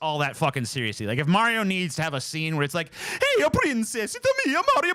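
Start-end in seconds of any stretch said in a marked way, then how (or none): 3.1-4.9 very high, cartoonish hero voice. Explaining why a voice gets annoying, demonstrating a scene line: Mario voice. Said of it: "I actually try to do the fucking voice".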